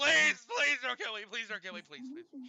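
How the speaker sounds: very loud, shrill screaming. Voicing a captive being tied to a tree: screaming plea for mercy. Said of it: "he starts screaming".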